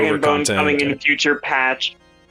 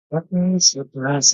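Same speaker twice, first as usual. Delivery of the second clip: quiet muttering under her breath. Voicing a character reacting to the group: muttering under her breath. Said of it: "she mutters under her breath".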